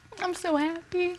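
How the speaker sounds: soft, high-pitched, joyful weeping through the words. Speaking of a new nephew, the speaker is crying with happiness.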